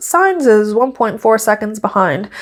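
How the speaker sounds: ordinary talk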